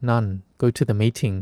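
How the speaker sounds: normal talking voice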